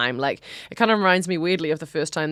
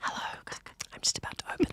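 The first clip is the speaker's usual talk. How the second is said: mock ASMR voice, much quieter. Right after praising a co-speaker's ASMR impression, the speaker tries one: mock ASMR voice. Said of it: "I like your impression of A S M R".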